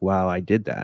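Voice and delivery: ordinary talk, nothing marked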